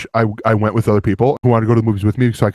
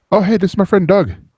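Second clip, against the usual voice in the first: badly done New Zealand accent, pitched way up; 10 semitones higher than usual. Describing a character, doing Korg in a horrible New Zealand accent. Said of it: "my horrible New Zealand accent".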